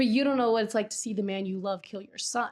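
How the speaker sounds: ordinary delivery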